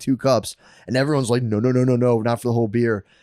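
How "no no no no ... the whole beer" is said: ordinary talk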